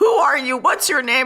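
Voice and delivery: high, urgent yell, hollering to far away. Retelling shouting questions to people from outside a window: retelling a yell. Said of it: "yelling to them".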